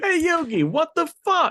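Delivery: very high, loud, lively character voice, swooping pitch. Quoting a cartoon scene back to another speaker: Joey impression. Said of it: "As good as yours".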